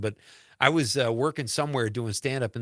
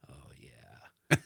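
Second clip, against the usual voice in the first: creepy, whispered mutter kept under the breath; 10 semitones lower, 8 dB quieter than usual. Retelling what a man a few seats away said: imitating a muttered remark. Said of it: "kinda under his breath".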